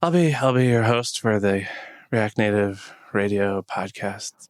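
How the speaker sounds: put-on sick, unwell-sounding voice. Opening the podcast as host while not feeling okay: acting sick, unwell voice. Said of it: "you don't sound so great".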